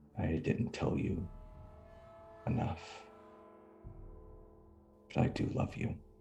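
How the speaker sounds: hushed, very quiet, breathy near-whisper. Voicing a character who kisses his father's forehead: very quiet. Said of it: "just very quietly says".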